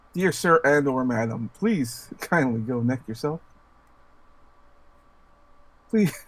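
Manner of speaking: mock polite voice with put-on formal courtesy. Reading out an imagined polite letter: mock polite letter voice. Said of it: "I may have to write a polite letter".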